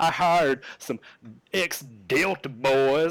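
imitated Texas accent. Quoting a line from a show episode, in the character's Texas accent. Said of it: "and his Texas accent".

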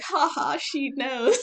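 put-on high, slow, uneasy, awkward little chuckle. Telling the listener how they reacted earlier, retelling an awkward chuckle. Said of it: "I like chuckled all awkwardly".

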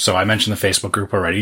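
quick, rushed, rattled-off reading, too fast.

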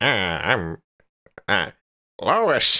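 nasal put-on voice. Showing how the voice should go after another speaker's attempts, in a nasally put-on voice. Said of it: "it's a little more like nasally".

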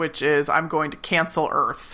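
plain

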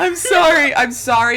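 high-pitched, drawn-out words spoken through laughter. Apologizing to the other speaker after a joke, laughing while talking. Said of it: "I'm laughing so hard".

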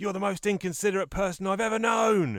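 high-pitched, loud comic-character shout. Reading out a comic strip panel where the character shouts: retelling a comic character shouting. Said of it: "he's shouting".

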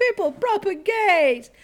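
high, slow, booming preacher-style shout. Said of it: "he shouted out to the people".

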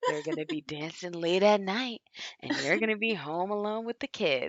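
put-on whisper. Retelling how a mother warned her daughter: imitating a whispered warning. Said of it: "she, like, whispered it in her ear".

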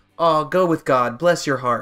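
condescending, patronizing tone. Showing how to answer a mean remark: condescending tone. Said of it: "say something really condescending".

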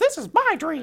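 loud, shrill cartoon mouse voice, pushed very high. Playing out a dream scene, saying the line in Mickey voice. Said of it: "Make sure you do it in the Mickey voice too. Like".

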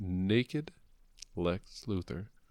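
slow, deliberate, drawn out word by word. Telling another speaker a comic's plot twist: said slowly. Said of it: "make sure you say it slowly".

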